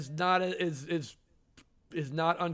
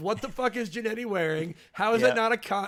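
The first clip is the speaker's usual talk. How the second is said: plain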